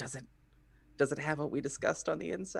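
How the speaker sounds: quick, rushed, hushed stage whisper under the breath. Her character beckons the blacksmith down to her level and asks, half-whispering. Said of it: "she whispers to uh".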